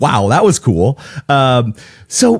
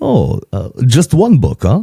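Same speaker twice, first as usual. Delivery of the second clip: put-on Greek accent. Retelling a man's reply after the speaker says they wrote a book, Greek accent impression. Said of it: "my best Greek impression".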